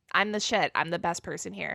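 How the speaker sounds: normal talking voice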